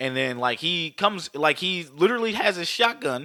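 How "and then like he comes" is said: plain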